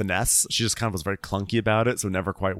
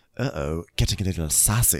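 mock muttering in a much lower voice; 5 semitones lower than usual. Retelling what a man muttered as he left, imitating someone muttering. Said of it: "he like mutters as he leaves, he mutters".

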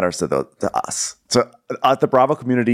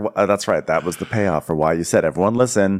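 plain

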